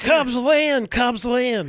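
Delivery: loud, very slow cheer, every word held. Doing an impression of Harry Caray: Harry Caray impression. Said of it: "I haven't harried Carey in a while".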